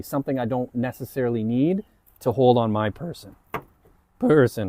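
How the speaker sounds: cracking voice. Showing gear bought on Amazon to the camera, voice cracking. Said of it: "my voice is cracking".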